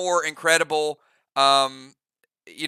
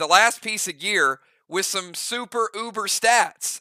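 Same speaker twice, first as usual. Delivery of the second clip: ordinary talk, nothing marked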